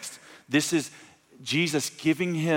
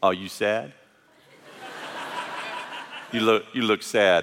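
mock playful, needling, teasing tone; 5 semitones lower than usual. Retelling how he once pictured Jesus, testing a man: Jesus mockingly punking someone. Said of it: "Jesus is just coming after him".

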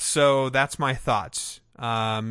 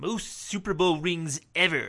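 put-on cartoon voice, much higher pitch; 6 semitones higher than usual. [name] is called over to say a line about the Pittsburgh Steelers in a Comic Book Guy voice. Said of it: "have him say in the comic book guy's voice".

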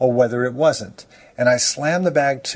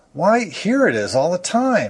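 high, indignant exclamation; 5 semitones higher than usual. Finding the missing thing on the other man's back, he exclaims indignantly. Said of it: "he exclaimed indignantly".

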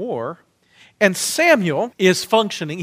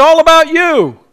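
very loud, very high car commercial announcer voice; 9 semitones higher, 10 dB louder than usual. A speaker addressing fellow Christians mocks society's commercialism, car commercial voice. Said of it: "I sound like a car commercial".

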